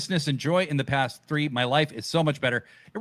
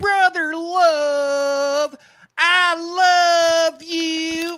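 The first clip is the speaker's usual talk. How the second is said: very high, very slow, shrill preaching tone, stretched "I"; 13 semitones higher, 6 dB louder than usual. Naming the worst wrestling voice and doing it: Brother Love voice. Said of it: "the worst voice is".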